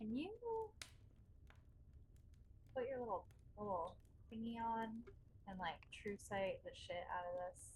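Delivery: whispered, very quiet. Leaning over to whisper a request to another character: whispering in character. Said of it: "lean over and whisper to Kelpie".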